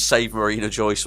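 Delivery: ordinary delivery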